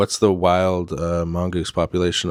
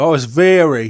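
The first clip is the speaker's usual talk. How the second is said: put-on Cockney accent, raised and high; 8 semitones higher, 7 dB louder than usual. Showing how to say it like a Cockney guy, Cockney accent. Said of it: "say it like a Cockney guy".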